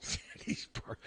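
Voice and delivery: words broken off by laughter throughout. Trying to repeat a phrase from the story, laughing while talking. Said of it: "I'm laughing again".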